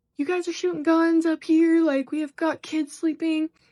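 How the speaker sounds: furious angry yell, high-pitched and loud. Retelling what a truck driver yelled at them: imitating a man yelling. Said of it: "and yelling at us".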